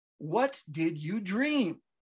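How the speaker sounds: precise, emphatic enunciation, every word carefully struck. Marcel steps toward Ida and repeats his question; precise, emphatic enunciation. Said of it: "enunciated with a great precision and emphasis".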